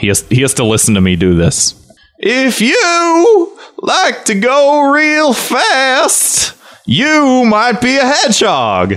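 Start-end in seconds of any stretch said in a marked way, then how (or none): 2.2-9.0 put-on very high, slow, swooping, drawn-out you. Doing an impression of Jeff Fowler as his punishment: Jeff Fowler impression. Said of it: "This is my impression of him".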